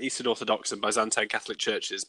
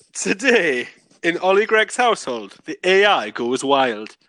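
put-on Geordie accent with raised pitch; 7 semitones higher, 5 dB louder than usual. Repeating a line on request after being asked about the accent, Geordie accent. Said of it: "Do it again".

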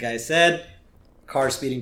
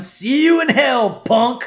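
loud high-pitched yelling. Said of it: "Snake is yelling at him".

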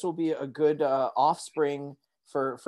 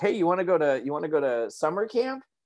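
mock joking, teasing tone, higher; 2 semitones higher than usual. Retelling what the speaker's father once jokingly asked: imitating father's joking tone. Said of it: "my father jokingly looking at me and going like".

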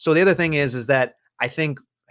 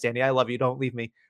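ordinary talk

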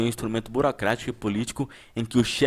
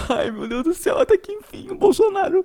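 very high, loud, tearful sobbing wail; 6 dB louder than usual. Retelling how people reacted to fake news, the speaker is imitating people crying. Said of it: "Mas os caras estavam chorando".

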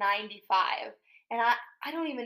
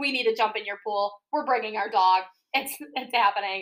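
plain

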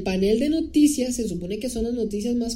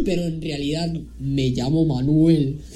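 fake deep voice, much lower; 6 semitones lower than usual. Retelling a line from a parody video in a put-on deep voice. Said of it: "Pero así con voz grave".

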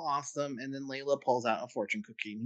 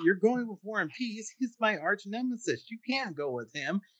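put-on high, worked-up angry outburst; 8 semitones higher than usual. Retelling a story, the speaker voices a boy upset about a girl's homecoming date; retelling an angry outburst. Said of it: "suddenly he gets all mad and angry".

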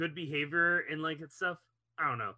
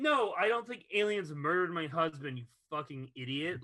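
ordinary talk

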